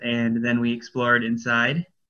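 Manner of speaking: ordinary talk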